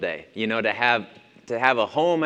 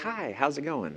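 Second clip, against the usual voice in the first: put-on politeness, suddenly much quieter; 3 semitones higher, 8 dB quieter than usual. Acting out opening a restaurant door in the middle of an argument: mock-polite sudden greeting. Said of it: "you immediately change behavior".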